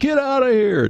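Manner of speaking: very high screaming yell. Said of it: "he's screaming out the door".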